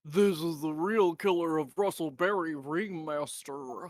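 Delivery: deliberately assumed, put-on American accent. Quoting the other speaker's accusation back at him: imitating an American accent. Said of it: "Did I get your American accent correct?".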